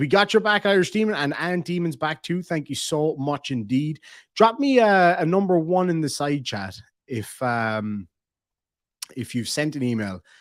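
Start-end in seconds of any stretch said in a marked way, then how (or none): none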